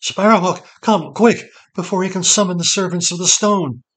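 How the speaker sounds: very high, shaking, trembling, urgent, pleading voice. A narrator reads a woman's plea to sparrowhawk, in a shaking voice. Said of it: "she said in a shaking voice".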